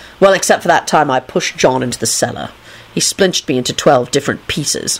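plain

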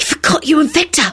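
furious, fierce, angry, high whisper. A girl speaks just after a wizard casts a spell and vanishes: furious whisper. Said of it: "Rosie whispered furiously".

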